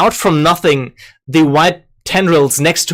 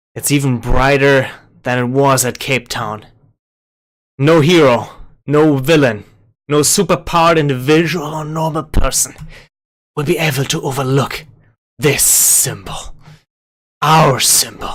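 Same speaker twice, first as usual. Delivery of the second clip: hushed whisper. Voicing a shadowy figure as light bursts out: whispering. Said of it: "the shadowy figure next to her whisper".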